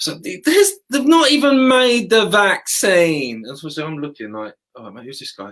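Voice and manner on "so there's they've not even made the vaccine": very high, drawn-out, grating annoying voice. Recounting a man interrupting a speech, imitating an annoying voice. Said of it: "it's the most annoying voice".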